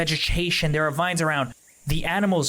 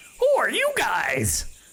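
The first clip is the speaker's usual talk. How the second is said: high talking-parrot voice; 6 semitones higher than usual. A game narrator voices a parrot looking down at the trapped heroes, parrot voice. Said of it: "do I want to do that voice".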